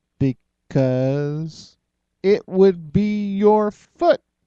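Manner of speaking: very slow, drawn-out speech. On Jellybean Radio, a host answers a riddle, talking very slowly. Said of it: "Why are you talking so slow?".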